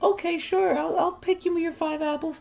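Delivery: put-on voice, pitched very high. Acting out a hypothetical about paying Jimmy to pick apples, in a Jimmy character voice. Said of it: "I don't know why I gave him that voice".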